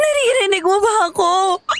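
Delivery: tearful voice. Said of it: "Bakit umiiyak ka?".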